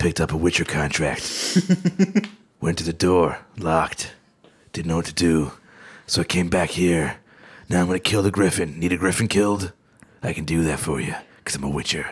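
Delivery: very low, fast douchey mutter. A gamer mimics the lead guy of the game he's playing: douchey Witcher 3 lead voice. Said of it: "the douchiest voice ever".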